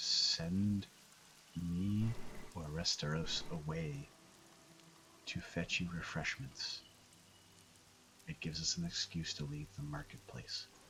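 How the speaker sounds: hushed whisper, just under the breath. Speaking in character to Serafina at the auction: quietly under breath. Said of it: "I say quietly under my breath to Serafina".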